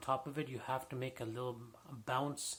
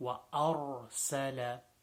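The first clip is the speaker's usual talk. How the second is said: "ra" said thickly, with a full mouth; 4 dB louder than usual. Showing a learner how to say the word: ra with a full mouth. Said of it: "or with a full mouth".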